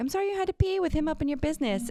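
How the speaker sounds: mock, very high, snide, snarky aside. Retelling what a woman at the dog park said to her dog: imitating a snarky woman. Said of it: "she was so snarky about it".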